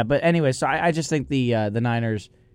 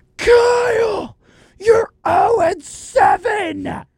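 mock-screaming, much higher, louder; 5 dB louder than usual. Retelling a fan behind them at the game yelling at the coach: imitating a fan screaming. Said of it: "just screaming".

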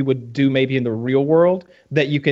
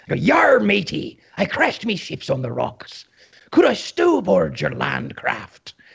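put-on pirate voice, rough, creaky, swooping drawl; 5 semitones higher than usual. Retelling asking another player for a ride after crashing a boat: put-on pirate voice. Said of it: "and I go".

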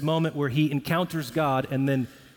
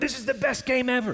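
put-on very high, bouncing, overexcited voice; 10 semitones higher than usual. Imitating a fan jumping up before the game: imitating an overexcited fan. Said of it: "they just started jumping up".

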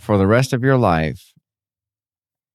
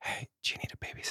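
fast, unvoiced creepy whisper. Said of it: "the more appropriate question".

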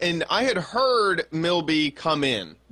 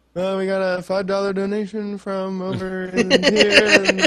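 put-on drunk mumble, slower; 3 semitones higher, 4 dB louder than usual. Retelling overhearing him through the bathroom door reading donations, imitating drunk mumbling. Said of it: "I hear him start mumbling".

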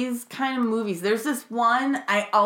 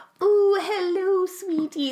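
put-on high, pitched-up old man voice; 9 semitones higher than usual. Retelling how an old guy sounded, in a Mrs. Doubtfire voice. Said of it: "he sounded like he was Robin Williams' inspiration for Missus Doubtfire".

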